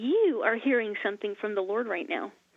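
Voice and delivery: ordinary talk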